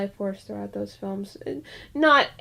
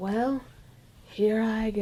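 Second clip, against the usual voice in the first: weird, creepy put-on voice. Retelling a movie scene, quoting the character's line in Frank Finlay's weird creepy voice. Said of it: "this really weird, creepy voice".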